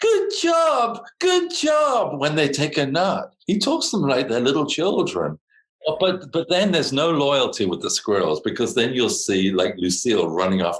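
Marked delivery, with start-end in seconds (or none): 0.0-2.2 very high, slow, drawn-out shrieky voice. Imitating a man who talks to squirrels, imitating a high shriek. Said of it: "He kind of shrieks at them like".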